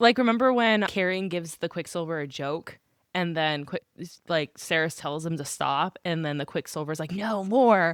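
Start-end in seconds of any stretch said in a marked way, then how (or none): 7.1-8.0 creepy put-on character voice. Retelling a scene from the story: creepy Quicksilver voice. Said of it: "his creepy voice".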